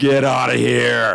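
big, rough, creaky, intimidating scary voice. A game master asks a player to stop a fight; the player answers in a big scary voice. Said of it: "use your big scary voice".

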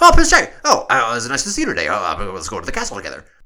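put-on frantic dub voice. Mocking how everyone talks in every Prince Charming episode, frantic Prince Charming dub voice. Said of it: "everyone speaks just like this".

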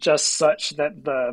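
plain

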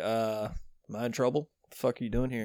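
offhand, unbothered, nonchalant casual delivery. Retelling how a movie character approaches a cop: imitating Peter McAllister being nonchalant. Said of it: "kinda nonchalant".

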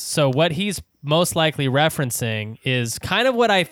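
plain

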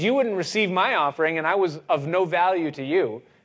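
snide, sarcastic, sneering jab. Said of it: "looks at God snidely and sarcastically".

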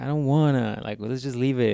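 put-on childish, whiny little kid voice. Retelling how Jimmy answers his buddy about fixing the truck: imitating Jimmy's whiny kid voice. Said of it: "gets his little whiny kid voice".

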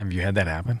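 soft, hushed, under-the-breath half-whisper. Asking about repair work on a head wound: half-whispering. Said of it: "Why are we whispering?".

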